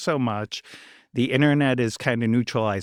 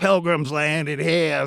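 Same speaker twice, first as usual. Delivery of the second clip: put-on thick, heavy, strong Boston accent, pitched up; 5 semitones higher, 3 dB louder than usual. Speaker quotes their dad's usual line, in a strong Boston accent. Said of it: "my dad had the strongest Boston accent".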